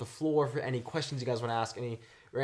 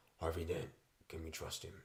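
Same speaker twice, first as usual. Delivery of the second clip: very low, almost hushed bat voice; 8 semitones lower, 11 dB quieter than usual. Reading out a viewer's question to the guests in a Batman voice. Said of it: "asks in a bat voice".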